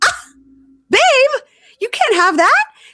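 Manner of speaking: very high, loud, mocking put-on voice. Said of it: "and she's like".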